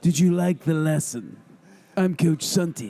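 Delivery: faked seductive voice. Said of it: "if you use that voice".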